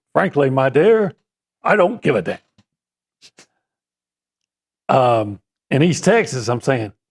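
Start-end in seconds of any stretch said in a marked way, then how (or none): 0.2-5.4 put-on old Hollywood leading-man drawl. Asked to say the quote both ways, first as Clark Gable would: Clark Gable impression. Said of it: "Clark Gable in Gone with the Wind says".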